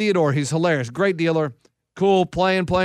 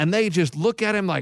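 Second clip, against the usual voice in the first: normal talking voice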